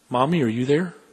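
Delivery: soft calling voice. Narrator reads a frightened young lady calling to her mother, called softly. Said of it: "she called softly".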